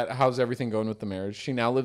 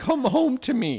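put-on cracking voice, higher and louder; 12 semitones higher, 4 dB louder than usual. Retelling a husband pleading with his wife to come home: imitating a voice cracking. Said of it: "His voice kinda cracks".

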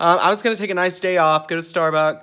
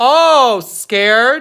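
serious raised voice, high-pitched and very slow; 6 semitones higher, 8 dB louder than usual. Warning an absent snitch to be scared: raising voice. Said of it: "I'm raising my voice".

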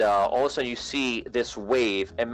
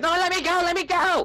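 very high, frantic, panicked cry; 3 dB louder than usual. Playing Sparky, who has been caught: Sparky freaking out. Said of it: "Like he's freaking out".

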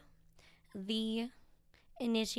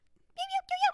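high, beeping birdcall imitation. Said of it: "would be like".

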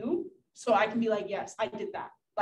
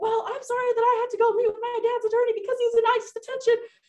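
very high, loud snapping tone; 13 semitones higher, 6 dB louder than usual. Retelling snapping at a teacher after a detention: retelling snapping at a teacher. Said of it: "snapped at him".

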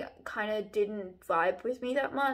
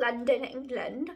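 sudden put-on English accent slipping out. Talking about where the story goes next, slipping into an accent. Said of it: "I don't know why that accent came out of me".

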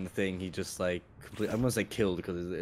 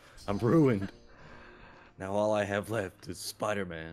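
overly energetic, put-on acted delivery. Imitating an actor's movie line after calling him bad. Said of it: "You're giving it too much energy".

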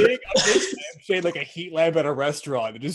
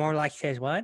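muttered under the breath, much quieter; 6 dB quieter than usual. Retelling what they said back to a guy in a conversation, under the breath. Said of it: "just under my breath".

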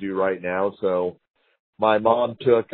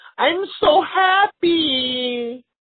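very high squeal, stretched out; 3 dB louder than usual. Retelling a scene, imitating a woman in a film.

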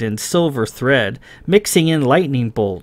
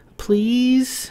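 very high, pleading cooing voice; 11 semitones higher than usual. She coaxes a reluctant man into a second-hand store, cooing. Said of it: "She cooed".

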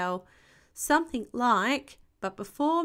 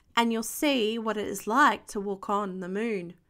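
plain reading voice

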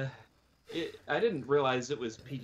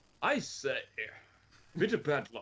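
fake, put-on English accent. Chatting about films, a speaker drops into a put-on english accent. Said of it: "get my English accent out again".

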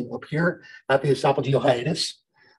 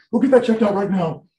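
mock-worried voice, higher pitched and faster; 6 semitones higher, 3 dB louder than usual. Teacher retelling a student's reaction to hearing about the hernia: imitating a worried student. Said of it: "He was like super concerned".

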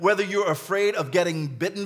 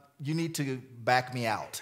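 very calm, steady and composed, low and soft; 6 semitones lower, 8 dB quieter than usual. Recounting a moment of fear, retelling a very calm voice. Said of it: "So I said in a very calm voice".

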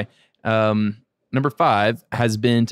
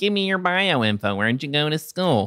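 high, put-on nerdy voice; 5 semitones higher than usual. Speaker mocks asking a guest for bio info, in a nerdy nerd voice. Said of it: "that's a nerdy nerd voice".

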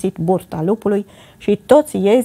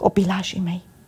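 gentle, soft voice, much quieter; 6 dB quieter than usual. Reading a fairy tale, the wolf speaks to the kids at the door in a gentle voice. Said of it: "spuse cu voce blândă".

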